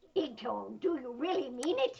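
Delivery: loud cartoon sidekick voice. Showing listeners how the show's character sounds, in Helpy's cartoon sidekick voice. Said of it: "I'm just doing that voice".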